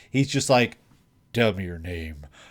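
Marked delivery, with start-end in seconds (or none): 1.3-2.2 the coolest guy voice, full cool delivery. Retelling an anime scene, quoting Subaru asking her name: very cool guy voice. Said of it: "in a very cool guy voice".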